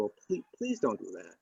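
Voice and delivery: mock nice, sweet, calm pleading tone. Retelling a talk with her about a gated trail: retelling own pleading. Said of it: "I'm just pleading with her".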